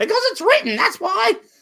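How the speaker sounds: very high, screechy British lady voice.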